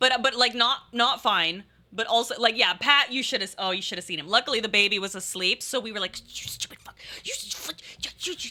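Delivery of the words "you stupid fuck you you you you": hushed, angry whisper-yell. Retelling yelling at Pat while the baby was asleep, reenacting whisper-yelling. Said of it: "whisper yelling".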